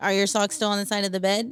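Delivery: straight, blunt, unsoftened delivery. Demonstrating to someone the unsoftened way to ask a question: blunt, unsoftened tone. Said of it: "then definitely like changing your tone".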